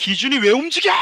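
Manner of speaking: demanding drill instructor voice. Retelling what the drill instructor always said: imitating a drill instructor. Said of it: "이렇게 조교한테 맨날 들었단 말".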